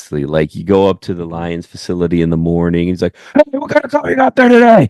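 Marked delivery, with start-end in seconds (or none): 3.3-4.9 very high, fast, pumped-up and excited. Imitating the coach greeting someone at the facility in the morning: imitating Dan Campbell excited. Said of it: "just really excited about".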